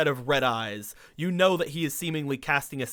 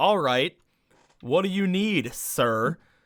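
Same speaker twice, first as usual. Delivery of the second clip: threatening, menacing tone; 3 semitones higher than usual. Voicing a character after a player's instinct roll: threatening tone. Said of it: "talking in a threatening tone".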